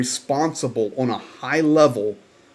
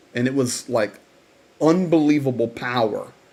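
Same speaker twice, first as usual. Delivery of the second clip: ordinary talk, nothing marked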